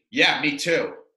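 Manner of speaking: ordinary talk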